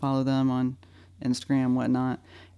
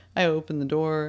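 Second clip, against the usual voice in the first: ordinary delivery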